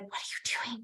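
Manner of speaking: hushed, barely audible, very quiet whisper. Retelling asking a class participant what she was doing: whispering. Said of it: "I ran over to her in a whisper".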